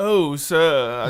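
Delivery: put-on fancy voice. Asked to try the fancy voice again, doing the fancy voice. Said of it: "Can you try the fancy voice again".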